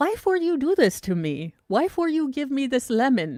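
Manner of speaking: put-on small, high, sing-song puppy-or-toddler voice. Speaker voices a puppy or toddler given a lemon: puppy or toddler voice. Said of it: "puppies or toddlers look at you like".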